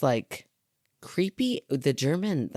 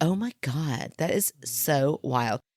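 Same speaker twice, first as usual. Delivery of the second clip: very slow, drawn-out, put-on Valley girl drawl. Imagining a Valley girl talking in a scary scene: put-on Valley girl voice. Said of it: "a Valley girl, like".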